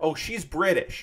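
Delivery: ordinary delivery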